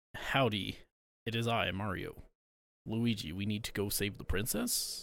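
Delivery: very deep, very quiet, slow, drawn-out put-on hero voice. Imitating how the actor will voice Mario in the movie: imitating Chris Pratt as Mario. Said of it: "Chris Pratt voice".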